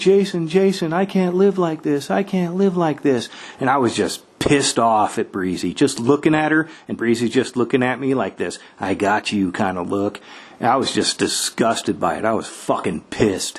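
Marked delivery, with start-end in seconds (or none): 0.0-3.3 play-acted, high, desperate, pleading yelling. Quoting someone yelling from the bed while the kids are loud, retelling a yell. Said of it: "Heather's on the bed just yelling".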